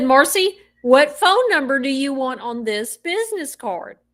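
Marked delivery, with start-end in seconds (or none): none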